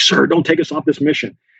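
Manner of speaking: put-on panicked, pleading voice. Retelling soldiers pulling their commander aside: imitating panicky soldiers. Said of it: "they were panicky".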